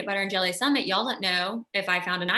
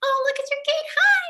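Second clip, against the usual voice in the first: very high, raised voice like a fairy; 6 dB louder than usual. Greeting another speaker who has just appeared: sounding like a fairy. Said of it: "I sounded like a fairy there".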